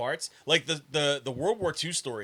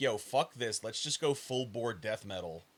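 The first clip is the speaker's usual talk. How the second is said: plain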